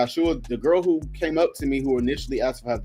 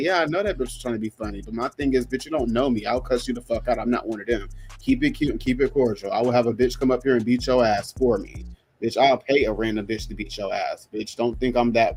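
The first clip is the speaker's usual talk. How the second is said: normal talking voice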